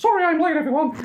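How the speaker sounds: high cartoon mouse voice. Describing a film scene they would like to direct, the speaker does a Mickey Mouse impression. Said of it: "excuse you to do a Mickey Mouse impression".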